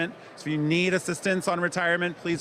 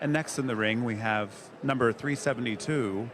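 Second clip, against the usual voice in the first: gentle, soft, softened announcer voice; 4 semitones lower than usual. Ring announcer asked to give the announcer voice: NPR-style announcer voice. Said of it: "It's like N P R, so I get a little quieter".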